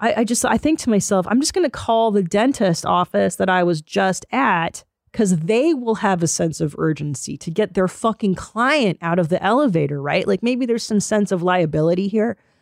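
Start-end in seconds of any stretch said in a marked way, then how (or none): none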